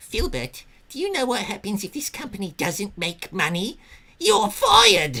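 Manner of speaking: very high, loud cartoon shriek, pitch swinging up and down. Voicing Rocco for [name]'s interpretation of him, speaking to Filbert: Rocco cartoon voice. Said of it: "I've been doing the voice as Rocco from Rocco's Modern Life".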